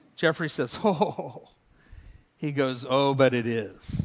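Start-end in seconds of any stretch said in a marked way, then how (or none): 2.9-4.0 put-on Haitian-accented delivery. Retell what Jeffrey answered when asked about the United States, imitating Jeffrey's Haitian accent. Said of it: "in this kind of interesting Haitian accent".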